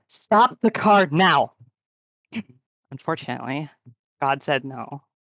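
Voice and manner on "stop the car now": very loud, high, barked and commanding shout. Game master voices a woman shouting with her weapon aimed at the window. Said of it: "And she shouts with her weapon still directed at the window".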